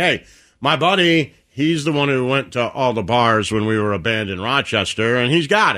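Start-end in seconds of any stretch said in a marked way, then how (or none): none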